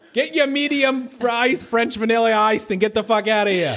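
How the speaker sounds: put-on Boston accent, very high-pitched. Imitating another speaker's words as a classic Boston scene: Boston accent imitating Alex. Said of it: "This is a classic Boston si-".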